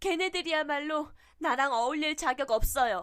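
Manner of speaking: loud, high, blurted-out shout. Reading a story aloud, a girl yelling down over the banister: shouting over the banister. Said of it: "냅다 소리쳤다".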